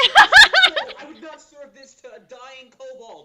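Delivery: shrill, booming, swooping, high angry yelling. Player's character inspects the kobolds' food to intimidate them, yelling about undercooked food. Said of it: "yelling how it's undercooked".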